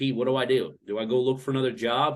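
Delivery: ordinary delivery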